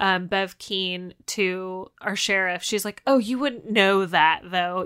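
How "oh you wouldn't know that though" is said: loud, condescending, talking-down, patronizing tone. Retelling a slight to the sheriff, imitating Bev Keane's patronizing tone. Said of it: "in a patronizing way".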